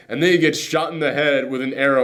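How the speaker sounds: ordinary talk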